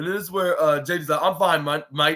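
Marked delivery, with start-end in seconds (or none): 1.2-2.2 put-on Australian accent. Retelling what J D McDonagh said in the match: Australian accent imitating J D McDonagh. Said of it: "even though he's not Australian".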